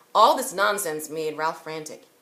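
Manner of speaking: plain reading voice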